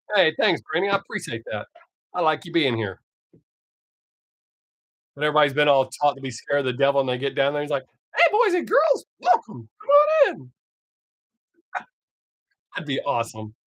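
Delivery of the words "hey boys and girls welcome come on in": squeaking high, swooping and slow. Joking that the devil in hell sounds like Mickey Mouse: Mickey Mouse voice. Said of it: "he sounded like Mickey Mouse".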